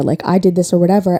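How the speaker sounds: normal talking voice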